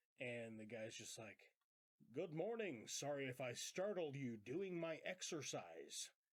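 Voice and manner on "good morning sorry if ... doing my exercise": very stilted, stiff, awkward, wooden delivery. Retelling a movie scene, imitating the caretaker: stilted caretaker voice. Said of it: "very, very stilted".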